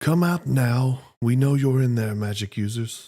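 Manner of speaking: overwhelming, booming, feral goblin bellow. Narrating the game, a goblin's voice calls out the magic users: booming feral goblin voice. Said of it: "booming, like overwhelming feral voice".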